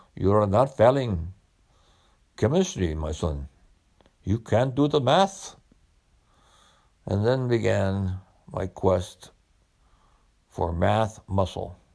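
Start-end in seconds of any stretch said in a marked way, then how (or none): 0.2-5.6 laid-on, put-on Indian accent. Quoting what his father told him, in an imitated Indian accent. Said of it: "in his Pakistani voice, Indian voice".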